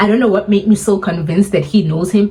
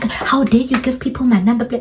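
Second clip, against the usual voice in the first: put-on frantic, indignant, panicked outburst, pitched up; 5 semitones higher than usual. Retelling what the driver said after the call: imitating a panicking man. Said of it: "Now the guy is panicking".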